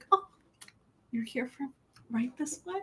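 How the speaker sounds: very quiet, soft-spoken, hushed murmur. A man greets the arrivals and leads them down a hallway, soft-voiced. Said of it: "he's very soft in his voice".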